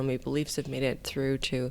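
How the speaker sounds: ordinary talk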